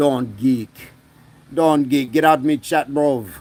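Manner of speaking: put-on Jamaican accent with Manchester coming through. Speaker asked to do accents, trying a put-on Jamaican accent. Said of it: "That was kind of like Jamaican Manchester".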